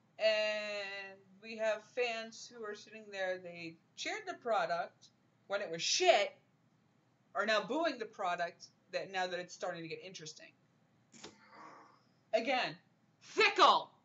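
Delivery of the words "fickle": loud, high yell. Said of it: "why you gotta yell at people?".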